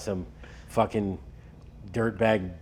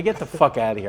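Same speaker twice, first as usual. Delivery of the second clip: ordinary talk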